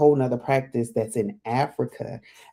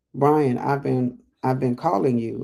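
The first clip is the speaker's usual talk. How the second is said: ordinary delivery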